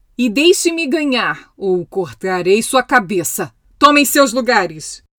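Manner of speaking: thundering, booming, thunderous voice. The Queen calls out an order to the crowd, in a thundering voice. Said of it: "gritou a rainha em uma voz de trovão".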